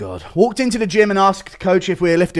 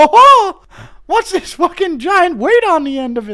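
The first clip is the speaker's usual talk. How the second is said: very high-pitched, loud, shrill cartoon voice; 12 semitones higher, 5 dB louder than usual. Reading a viewer request, then doing a Mickey Mouse voice. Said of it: "Impression of Mickey Mouse".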